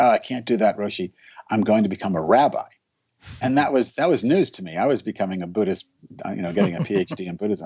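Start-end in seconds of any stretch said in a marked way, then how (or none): none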